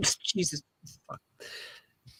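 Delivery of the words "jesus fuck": soft laughing through the words. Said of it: "Sorry, I'm laughing at".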